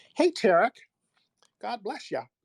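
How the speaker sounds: very high, proper, prim-sounding voice.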